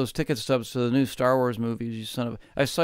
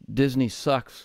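usual speaking voice

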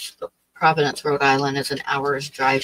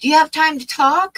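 put-on very high, raised Texas accent; 13 semitones higher, 6 dB louder than usual. Recalling Donna phoning and asking if she has time to talk: Donna's Texas accent. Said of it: "with her Texas accent".

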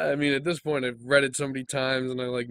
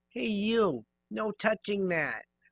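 nasal voice, much higher; 8 semitones higher than usual. A props assistant calls out to someone, in a nasal voice. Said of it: "I'm an assistant around here. I help with props and stuff. ... nasally. Nasal".

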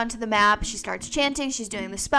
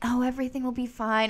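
put-on soft whisper, quieter; 4 dB quieter than usual. Imitating a character who speaks close and soft to a friend: imitating a character whispering. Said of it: "kind of, like, whispering".

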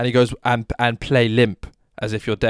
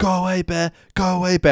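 mock, high, stretched-out, drawn-out screamed shout; 7 semitones higher than usual. Describing a park ranger scaring off bears, imitating a ranger screaming. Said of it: "And he's screaming".

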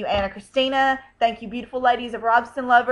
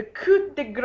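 French phrase spoken with Spanish accent; 2 semitones higher than usual. Listing gifts received, the speaker says a French phrase in a Spanish accent. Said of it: "I just said a French word with a Spanish accent".

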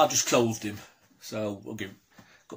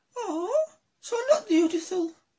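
put-on female voice, much higher. Voicing the woman in a back-and-forth with another character, attempted woman's voice. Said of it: "try to do a woman's voice".

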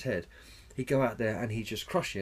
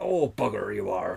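slow, rough, creaky voice; 2 semitones lower, 4 dB louder than usual. Imitating the Darth Vader actor's reply about the overdub: David Prowse impression. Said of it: "And Dave Prowse is like".

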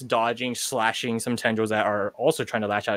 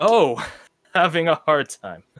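smug, amused, condescending man's voice; 6 semitones higher, 5 dB louder than usual. Narrating a scene where a man's voice mocks the listener's predicament: condescending, amused. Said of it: "Condescending, amused".

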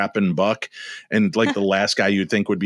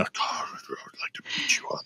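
put-on muttering under breath, quieter. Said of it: "mutterings under breath and a lot of threats".

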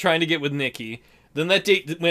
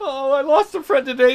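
put-on sobbing, high, tearful crying voice; 9 semitones higher than usual. Acting out a crying thug mugging someone: mock crying while talking. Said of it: "Why are you crying?".

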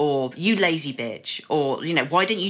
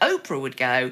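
ordinary talk

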